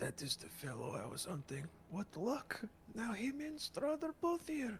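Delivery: whispering. Playing a character leaning over to tell another something: whispering into someone's ear. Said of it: "kinda whisper in Malin's ear".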